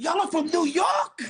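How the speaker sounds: high, loud surprised shout.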